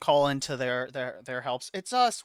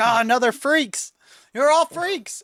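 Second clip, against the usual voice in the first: very high, shrill scream rising in pitch; 10 semitones higher, 5 dB louder than usual. Voicing a prisoner who interrupts a sermon: screaming. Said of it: "He screams in his head".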